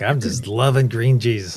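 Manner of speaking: stoned, blissed-out, gushing enthusiastic voice. Retelling what a lady said on an online conference: imitating a stoned woman. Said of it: "she is freaking baked when she comes on".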